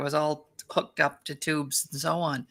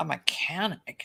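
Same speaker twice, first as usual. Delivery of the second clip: mock haughty, belittling, condescending, scoffing; 6 dB quieter than usual. Retelling a surgeon's reply to being called a mechanic: imitating a condescending tone. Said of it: "very condescending".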